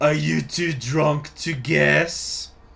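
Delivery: slow, obnoxious, jokey put-on French accent. Reading the son's game dialogue aloud: obnoxious French accent. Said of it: "do the obnoxious French accent for my son Bernard".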